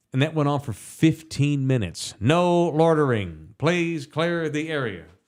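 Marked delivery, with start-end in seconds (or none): 2.2-5.0 slow, robotic, mechanical automated announcement voice. Retelling a loudspeaker heard at night: imitating a robotic ChatGPT loudspeaker voice. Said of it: "a Chat G P T voice or something that goes".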